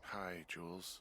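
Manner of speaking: tired, worn-out, drained, weary voice. Picking up the radio, [name] greets Jules, sounding tired. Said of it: "you sound tired".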